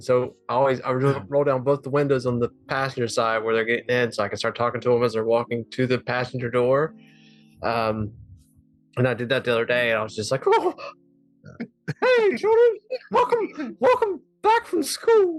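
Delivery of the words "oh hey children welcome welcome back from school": squeaked out, high-pitched and slow. A dad greets his children from the car at pickup; Mickey Mouse voice. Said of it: ""That's my Mickey Mouse."".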